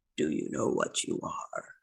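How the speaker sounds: deep, low, rough, gravelly voice, barely above whisper. Narrating a game, the speaker voices a voice that speaks again: deep, gravelly voice. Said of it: "It's a deep, kind of gravelly voice".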